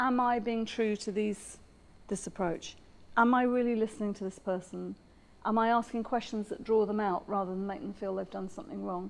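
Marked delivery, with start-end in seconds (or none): none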